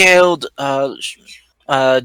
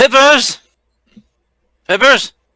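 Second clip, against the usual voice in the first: calling out loudly, higher and louder; 7 semitones higher, 5 dB louder than usual. Calling out in character for a companion to find, shouting a name. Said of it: "I would also avoid raising your voice".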